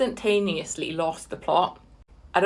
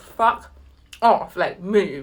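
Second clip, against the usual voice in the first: ordinary talk, nothing marked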